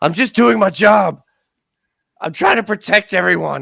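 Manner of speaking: very high, loud shouting. A character answers a disembodied voice in his ear: shouting into the darkness. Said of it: "he kind of shouts out into the darkness".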